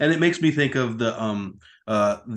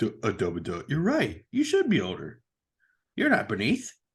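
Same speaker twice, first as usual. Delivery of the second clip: put-on, sing-song, childlike little kid voice; 3 dB quieter than usual. Retelling a confused reply in a story, in a little kid's voice. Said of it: "I gave him like a little kid's voice".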